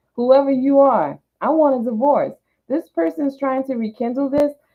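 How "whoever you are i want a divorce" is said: put-on sudden slip into New York accent. Saying 'i want a divorce', suddenly slipping into a new york accent. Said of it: "all of a sudden I went into my New York accent".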